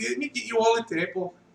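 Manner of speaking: soft, high, failed put-on German accent. Offering the group a table in a role-play, bad german accent. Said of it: "I'm trying to do a German accent".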